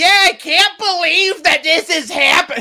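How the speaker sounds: put-on loud, very high, drawn-out, tipsy drunk voice. Retelling a disruptive audience member during a quiet ballad: imitating a drunk woman.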